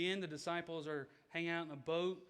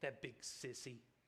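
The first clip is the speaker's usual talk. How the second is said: whispered mumble under the breath; 5 semitones lower, 8 dB quieter than usual. Telling a story about a little boy after his mother refuses him, mumbled under breath. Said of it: "kind of mumbles under his breath".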